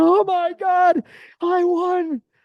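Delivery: mock shrieking, very high and very slow. Retelling the mom's reaction to her lottery ticket, imitating her screaming. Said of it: "She's screaming".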